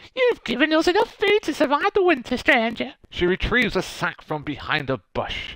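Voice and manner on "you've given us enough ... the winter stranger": put-on very high, elderly woman's old lady voice. Acting a character who thanks a stranger: old lady voice. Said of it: "my old lady voice".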